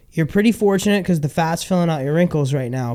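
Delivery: ordinary talk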